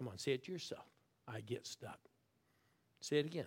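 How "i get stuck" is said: hushed whisper, lower and quieter. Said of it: "I want you to whisper".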